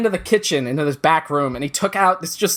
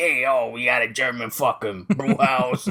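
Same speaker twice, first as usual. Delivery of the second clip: put-on Staten Island accent, lower pitch; 4 semitones lower, 4 dB quieter than usual. Retelling how the men running a brew house talked: imitating Staten Island guys. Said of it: "It was all guys like this".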